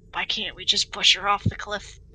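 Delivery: whispered line. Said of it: "I just whispered to them".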